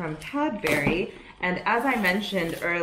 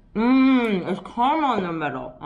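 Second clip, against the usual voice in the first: slow talk while chewing through a full mouth; 4 semitones higher, 4 dB louder than usual. Tasting a candy from an advent calendar, talking with mouth full. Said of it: "I'm talking with my mouth full".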